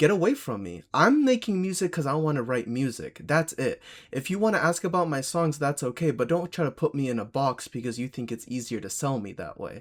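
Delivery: put-on angry, heated voice. Retelling how an interviewed musician answered a question: imitating someone getting mad. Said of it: "And he gets mad".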